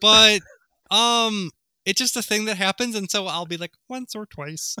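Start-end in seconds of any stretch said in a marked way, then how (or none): 3.9-4.8 odd, weird little frog-puppet voice, soft. Showing how she repeats a line she often says, the speaker uses a weird Kermit voice. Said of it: "I make like a weird Kermit voice".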